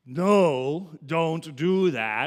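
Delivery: very loud, severe, slow, drawn-out stern voice. Giving an example of an imperative while explaining grammar, in a very stern voice. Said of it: "in a very stern voice".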